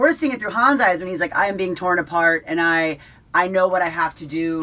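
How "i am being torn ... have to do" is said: ordinary talk, nothing marked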